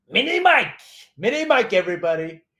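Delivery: loud showman-style taunting call to a room. Doing an impression while talking about Bloomberg: Donald Trump impression. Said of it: "I'm doing my Donald J Trump impression".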